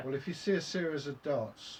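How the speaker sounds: ordinary talk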